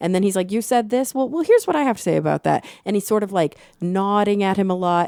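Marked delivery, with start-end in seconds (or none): 0.5-2.7 patronizing yet kind, pitched up with swooping intonation. Imitating a debater being kind of patronizing but kind to a nervous kid: imitating Charlie Kirk, patronizing but kind. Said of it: "kind of patronizing, but also in a very kind way".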